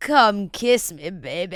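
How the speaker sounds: very slow, every word drawn out. Retelling how Curtis talks on a date: imitating Curtis talking like Austin Powers. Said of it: "And the way he's like".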